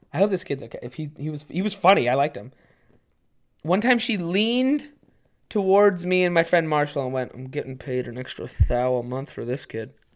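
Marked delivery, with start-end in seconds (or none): 7.3-9.9 mock whisper, quieter. Retelling what a woman leaned in and told two sixteen-year-olds, imitating a whisper. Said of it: "She whispered that to two".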